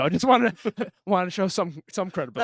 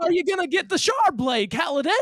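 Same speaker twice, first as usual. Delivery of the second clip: put-on old man's voice, higher; 9 semitones higher than usual. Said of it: "Give me a Christopher Walken voice".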